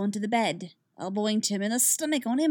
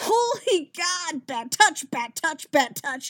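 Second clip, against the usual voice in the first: high, drawn-out hollering yell; 7 semitones higher, 4 dB louder than usual. Narrator reads a man protesting during unwanted hugs, yelling. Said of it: "Tim is yelling".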